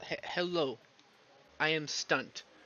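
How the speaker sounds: very slow, deliberate, put-on Korean accent. Offering to viewers, trying a Korean accent copied from a friend. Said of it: "I can try to do a Korean accent".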